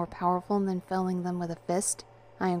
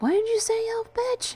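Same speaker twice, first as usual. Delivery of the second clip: very high-pitched exclamation; 3 dB louder than usual. Jess brandishes his knife and answers Ben: exclaiming. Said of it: "Jess exclaimed while brandishing his knife".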